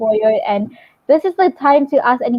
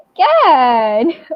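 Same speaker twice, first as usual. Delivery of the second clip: voice cracking and breaking; 3 dB louder than usual. Praising a speaker's slides, excited: voice cracking. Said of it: "my voice just broke there".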